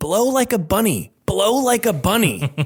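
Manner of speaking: put-on very high, loud, blurted-out yelling. Recalling what he yelled at a two-year-old, retelling a loud yell. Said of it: "just loudly yelling".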